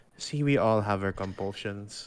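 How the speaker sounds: hushed, sidelong half-whisper. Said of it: "I whisper to Eden".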